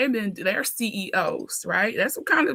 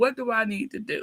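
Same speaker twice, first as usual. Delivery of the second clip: put-on distraught crying and sobbing. Recalling calling a mentor for help, acting out distraught crying. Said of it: "crying, distraught".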